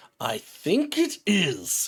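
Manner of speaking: very slow words through clenched, gritted teeth. Narrating the scene, the speaker voices a character addressing the players, through gritted teeth. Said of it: "gritted through teeth".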